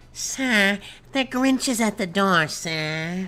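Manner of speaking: high sniveling henchman voice, each sir drawn out. Trying out a character voice while sick, doing a Snively voice. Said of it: "Snively. Just like".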